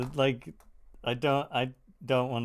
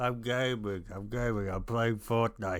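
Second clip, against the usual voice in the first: put-on old man voice, sounding about fifty-nine. Acting out a gamer who answers his mom: put-on old man gamer voice. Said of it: "Why do you sound like a fifty-nine-year-old man?".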